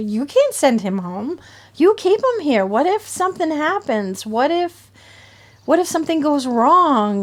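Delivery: play-acted demanding yell. Retelling what was said at the hospital, retelling yelling at a doctor. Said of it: "I was yelling at the doctor".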